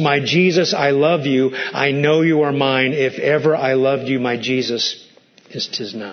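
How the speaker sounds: put-on quiet tearful voice. Retelling the Father's words to Jesus on the cross: retelling words said quietly through tears. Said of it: "saying quietly through his tears".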